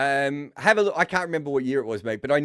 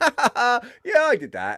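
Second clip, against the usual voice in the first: put-on very high, slow girlish giggle; 10 semitones higher than usual. Retelling a guest owning up in an interview, imitating Hassan giggling like a little girl. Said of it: "he's giggling like a little girl at times".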